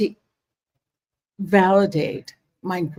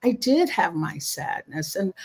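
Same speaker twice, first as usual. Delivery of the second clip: ordinary talk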